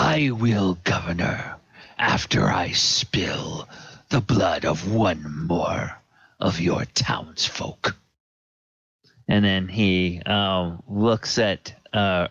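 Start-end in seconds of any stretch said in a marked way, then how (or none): 0.0-7.9 in-character dragon man voice. Narrating a story, the dragon man answers the governor; dragon man's voice. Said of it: "dragon man looks up at the governor and says".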